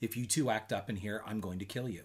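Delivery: soft, hushed, quiet, menacing voice. Retelling a mother's warning to her children: imitating a quiet threat. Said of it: "very quietly say".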